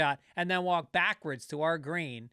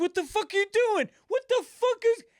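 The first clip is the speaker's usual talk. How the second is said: put-on very high-pitched screamed outburst; 4 dB louder than usual. Retelling how a golfer turned around, imitating a man screaming. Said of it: "he starts fucking screaming".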